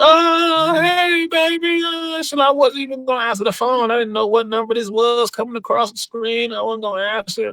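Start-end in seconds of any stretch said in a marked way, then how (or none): 0.0-1.8 mock scream, much higher and slower. Retelling how people on the phone greeted their grandson, imitating someone screaming. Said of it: "they started screaming like".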